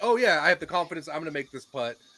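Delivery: ordinary talk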